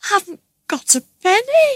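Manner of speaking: frightened, very high. Reading a train passenger answering a gunman who demands his money, frightened. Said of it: "John answered in fright".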